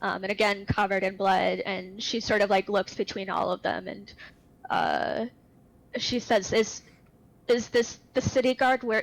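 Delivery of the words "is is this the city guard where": panicky, panicked voice broken by hiccups. A woman character asks the group a question, in a panicked hiccupy voice. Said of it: "talking in like this panicked hiccupy voice".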